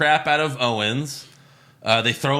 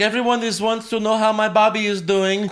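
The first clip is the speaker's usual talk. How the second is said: put-on Russian-style accent, higher pitch; 9 semitones higher, 3 dB louder than usual. Retelling what a wrestler says about Bobby: imitating Lana's accent. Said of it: "I don't know why I'm doing the accent".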